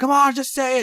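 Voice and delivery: very high, loud, excited holler. Retelling how mom yelled at the tv during a show: imitating mom yelling at the tv. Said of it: "yelling at the T V".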